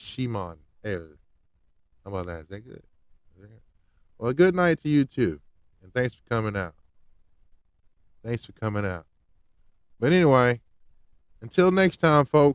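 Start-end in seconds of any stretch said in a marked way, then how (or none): 0.0-1.1 very soft, hushed put-on Jamaican accent. Saying a name again after trying it once, now in a Jamaican accent. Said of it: "Can I do it in my Jamaican voice?".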